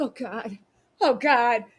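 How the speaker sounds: put-on cringing, appalled, slow and disgusted. Retelling own reaction to a gross TV scene: retelling own disgusted reaction. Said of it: "I was watching T V and I was like".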